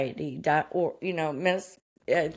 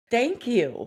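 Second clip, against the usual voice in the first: tearful voice coming through tears, pitched up; 5 semitones higher than usual. Speaker retelling a reaction to finally being diagnosed, imitating own crying thanks. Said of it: "I started crying like".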